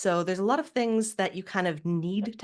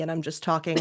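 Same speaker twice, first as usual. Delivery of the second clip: displeased, unhappy, frowning tone; 2 semitones lower than usual. Showing how a frown can be heard in the voice, frowning, unhappy tone. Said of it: "you can hear I'm now sort of frowning, and I'm not very happy".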